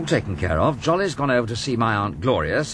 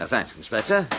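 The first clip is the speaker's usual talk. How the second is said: plain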